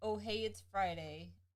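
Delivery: ordinary delivery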